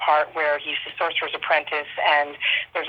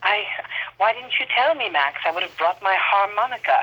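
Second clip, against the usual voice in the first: wonderfully dry, catty, bitchy delivery; 4 semitones higher than usual. Quoting the Baroness's lines with someone, as a dry, bitchy Baroness impression. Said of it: "she's like wonderfully dryly kind of bitchy".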